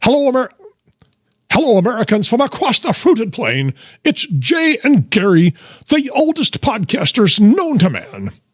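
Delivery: put-on character voice, very high, sing-song and swooping. Doing an impression for another speaker to guess: Rush Limbaugh voice. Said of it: "let's see if you can tell who this is".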